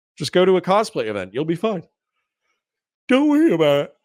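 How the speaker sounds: talking through a yawn. Answering a chat comment as it gets late: yawning while talking. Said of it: "sorry for yawning in your ear".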